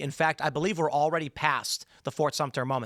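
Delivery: ordinary talk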